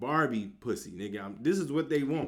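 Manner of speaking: normal talking voice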